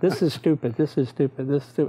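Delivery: ordinary talk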